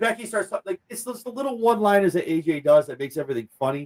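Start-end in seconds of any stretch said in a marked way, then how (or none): none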